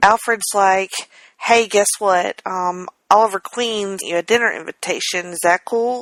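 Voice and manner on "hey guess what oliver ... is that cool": ordinary talk, nothing marked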